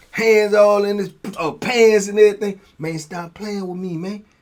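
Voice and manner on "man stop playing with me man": put-on smooth, low-voiced talk, quieter. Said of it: "he talk like a pimp".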